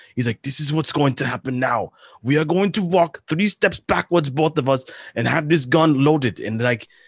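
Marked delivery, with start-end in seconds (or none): 0.5-6.4 put-on thick German accent laid on heavily, pitched up. Retelling a director threatening a star on set: thick German accent as Werner Herzog. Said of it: "in his thick German accent".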